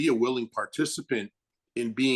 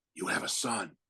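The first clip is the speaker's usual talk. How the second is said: soft, hushed, close whisper; 3 semitones lower, 7 dB quieter than usual. Retelling being hugged on set and told the news: imitating Frank whispering. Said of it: "in my ear whispering".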